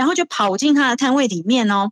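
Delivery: ordinary talk, nothing marked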